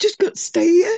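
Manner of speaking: loud, tearful crying. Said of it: "I'm really sorry that I'm crying".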